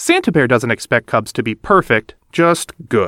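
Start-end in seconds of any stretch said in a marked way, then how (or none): none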